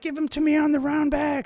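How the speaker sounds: high, loud calling out. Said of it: "I was like".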